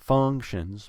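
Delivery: stress on func- in functions. Demonstrating word stress in a sentence: stress on the first syllable of functions. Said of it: "Put stress on the first syllable".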